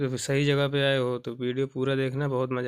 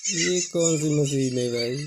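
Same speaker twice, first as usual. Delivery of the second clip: ordinary delivery, nothing marked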